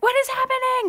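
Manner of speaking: very high, loud, amazed shriek.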